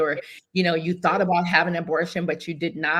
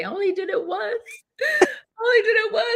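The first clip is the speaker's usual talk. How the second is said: mock, very high, tearful bawling pleading tone. Telling Alexis about learning she was pregnant, reenacting her own crying. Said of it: "I began to cry and say".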